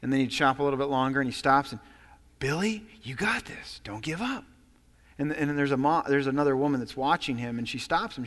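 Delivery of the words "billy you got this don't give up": soft, hushed, calm and patient whisper. Retelling a story of a father encouraging a fussy child: imitating someone whispering. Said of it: "he'd stop and he'd whisper".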